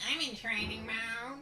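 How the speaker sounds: put-on dorky, nerdy voice. Announcing being in training mode in the game: put-on nerd voice. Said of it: "Good nerd voice".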